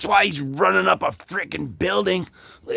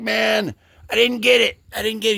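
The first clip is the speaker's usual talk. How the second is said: mock worked-up, frantic, screamy, half-yelled, held back; 3 semitones higher than usual. A guy bursts in on a couple about to kiss, imitating someone yelling and screaming. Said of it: "this guy comes in and he's yelling, screaming".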